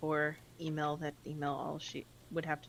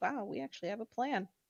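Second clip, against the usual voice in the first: startled, mumbled aside to herself; 7 semitones higher than usual. Mia, surprised, stares at the ground, muttering to herself. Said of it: "she kind of mutters to herself".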